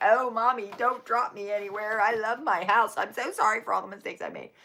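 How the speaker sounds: whining, begging, pleading dog voice. Retelling how the dog whined in the truck: imitating a dog whining. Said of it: "He was whining like".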